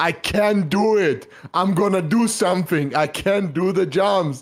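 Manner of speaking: put-on emotional scream, high, loud, drawn out. Retelling how a friend called on Discord, imitating someone screaming. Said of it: "start screaming".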